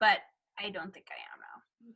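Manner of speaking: low, hushed, whispered aside.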